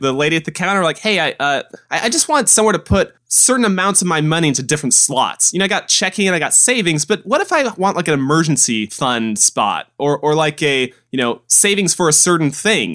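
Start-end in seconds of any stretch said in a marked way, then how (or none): none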